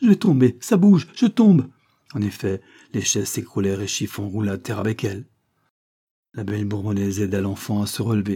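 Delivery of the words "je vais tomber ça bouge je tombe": very high, loud, full-voiced outcry. A child on wobbling stacked chairs cries out. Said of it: "s'écria l'enfant".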